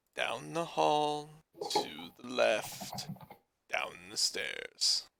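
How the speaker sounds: hushed, disembodied, mysterious whisper. Voicing a voice heard inside a character's head: whispering voice in the head. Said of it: "a voice whispering".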